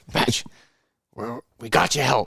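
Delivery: loud, high, aggressive, pushy acted coach voice. Retelling a phone call with his high school wrestling coach, imitating aggressive talk. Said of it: "he talks real aggressive".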